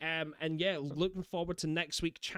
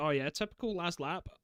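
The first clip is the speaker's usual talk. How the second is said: ordinary talk, nothing marked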